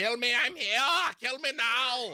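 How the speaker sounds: very high, bad Austrian or German accent. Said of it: "It's the worst German accent I've ever, or Austrian accent".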